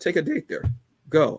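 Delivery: cracking, breaking voice going up high. Speaking to listeners about a family event, voice cracking. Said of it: "I don't know why my voice cracked like that".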